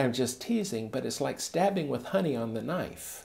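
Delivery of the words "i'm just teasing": normal talking voice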